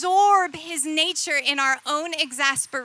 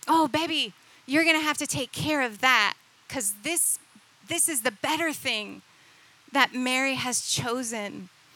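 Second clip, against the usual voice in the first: play-acted gentle, loving, kind, tender voice; 3 semitones lower, 3 dB quieter than usual. Retelling how Jesus answered Martha in a kind voice: kind tender voice as Jesus. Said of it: "he spoke to her in a kind voice".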